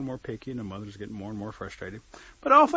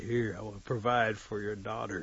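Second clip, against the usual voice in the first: ordinary delivery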